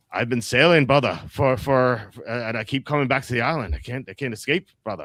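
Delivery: put-on Scottish accent with halting repeats. Recapping Lost, the speaker quotes Desmond arriving by boat, Desmond's Scottish accent. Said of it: "so he's a Scottish accent. He's like".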